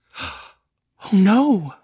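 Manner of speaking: very high, sudden, swooping outcry. Rosalind reacts to Mrs. Mackenzie not having seen Paul, exclaiming. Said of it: "exclaimed Rosalind".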